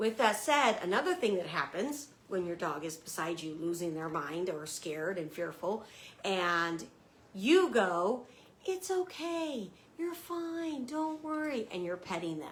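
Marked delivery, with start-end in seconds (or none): 8.6-11.7 soft, high, slow, gentle soothing reassurance. Explaining dog behavior, the speaker shows owners comforting a fearful dog in a soft voice. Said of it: "you're talking in a soft voice".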